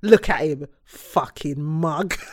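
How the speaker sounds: very slow, dragged-out, dismissive, mocking tone. Retelling a TV scene where she looks at him: imitating Lauren. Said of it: "it's just the way she said it".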